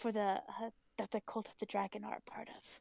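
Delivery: voice dropped low. Speaking in character during a role-playing game, in a lowered voice. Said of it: "I like lower my voice".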